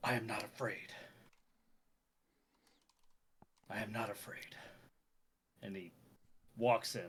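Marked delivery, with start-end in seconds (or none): 0.0-4.5 whispered, muttered under the breath. Narrator voicing a character who hesitates before walking in: muttered to himself. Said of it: "he mutters".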